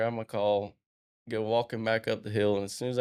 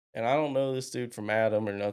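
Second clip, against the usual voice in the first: ordinary talk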